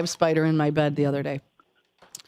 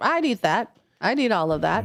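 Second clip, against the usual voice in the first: ordinary talk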